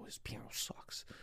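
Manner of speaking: seething, hushed, angry whispered aside. Retelling whispering to friends during school assemblies: imitating a whisper. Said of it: "I whisper to my friends".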